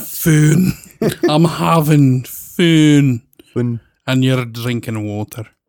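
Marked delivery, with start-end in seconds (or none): 0.0-3.2 bad put-on Swedish accent, very slow. Trying out how they would say the word, in a bad Swedish accent. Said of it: "That sounds more like a bad Swedish".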